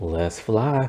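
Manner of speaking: soft, hushed, gentle, too-sweet lovely voice. Mimicking how she gives the warp command, imitating her soft, lovely voice. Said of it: "the way she does it is too soft and lovely".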